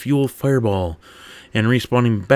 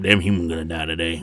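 cowboy-style grunt voice, lower; 5 semitones lower, 3 dB quieter than usual. Reading a story aloud and voicing a grunt: Western grunt voice. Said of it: "a Western grunt now in my head is going like".

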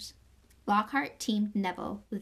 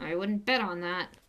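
muttered, mumbling, lower pitch; 2 semitones lower than usual. Watching Snape before the duel, Harry answers Lockhart: muttered. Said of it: "Harry muttered".

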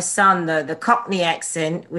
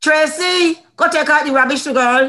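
Barbadian accent; 9 semitones higher, 4 dB louder than usual. Asked on the spot to whip out an accent: Bajan accent. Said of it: "can you whip out a Bayesian accent?".

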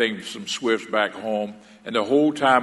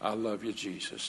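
soft, quieter whisper; 15 dB quieter than usual. Retelling a prayer at one's lowest point, imitating own past soft voice. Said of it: "Just so soft".

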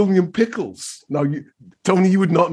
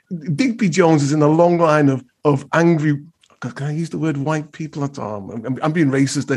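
plain

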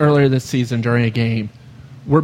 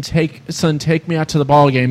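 ordinary talk

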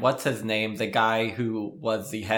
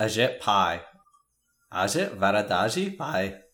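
put-on Indian accent, spoken very slowly. Saying a name after being asked to use the accent: put-on Indian accent. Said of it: "Can you say it with the accent?".

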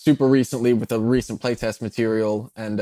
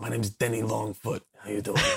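really low, soft, hushed antihero voice; 9 dB quieter than usual. Showing how they voice a rabbit-folk character: Jon Bernthal Punisher voice. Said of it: "a Jon Bernthal, like, Punisher kind of impression".

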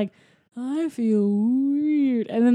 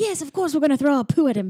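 talking chimp voice with put-on British accent; 2 semitones higher than usual. Retelling a character's line from a story, put-on British accent. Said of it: "has like a like, British accent".

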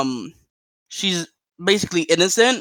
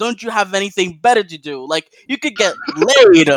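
mock heated, loud, swooping, scolding yell; 3 semitones higher, 6 dB louder than usual. Retelling a Friday night at a Mexican restaurant, screaming at singers: retelling screaming at someone. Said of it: "I just started screaming at them".

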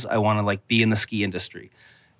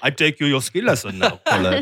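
sing-song, higher-pitched, swooping voice; 5 semitones higher than usual. Joking with co-hosts about a ski instructor named Hans, Hans impersonation. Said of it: "That's my Hans impersonation".

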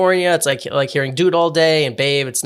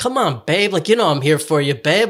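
ironic, mocking fake Hollywood guy voice. Retelling how friends mocked someone: ironic fake Hollywood guy voice. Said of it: "this, like, fake Hollywood guy".

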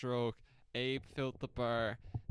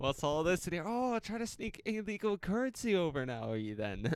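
put-on Irish accent, pitched up, accusing tone; 5 semitones higher, 3 dB louder than usual. Acting out staff finding swallowed coins before a flight, Irish accent. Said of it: "Is that how the Irish speak?".

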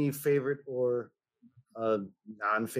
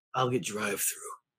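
lowered, gruff put-on voice; 3 semitones lower than usual. Retelling a movie scene where Batman answers Alfred: gruff Val Kilmer Batman voice. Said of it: "I did the voice gruffer than Val Kilmer".

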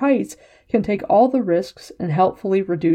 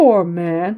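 derisive, scornful, mocking false sympathy. After a man's ultimatum, a woman laughs and answers him mockingly. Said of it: "she said mockingly".

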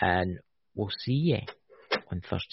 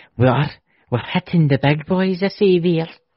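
put-on Scottish accent, higher and louder; 9 semitones higher, 11 dB louder than usual. Repeating the other speaker's line for fun in a Scottish accent. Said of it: "There's another Scottish accent for you".

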